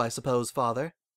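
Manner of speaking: ordinary talk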